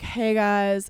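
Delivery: flat, level, deadpan monotone drone. Imitating a young influencer greeting her viewers, in a monotone voice. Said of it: "she has a very monotone voice".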